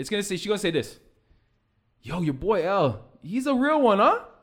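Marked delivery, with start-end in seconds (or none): 2.0-4.2 put-on very slow, tough ruffian drawl. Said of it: "he sounds like a ruffian".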